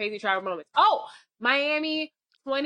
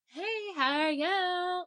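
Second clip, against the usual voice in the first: mock drunk voice, higher, quieter; 6 semitones higher, 4 dB quieter than usual. Retelling walking up to guys at a booth, in a put-on drunk voice. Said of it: "That's my drunk voice".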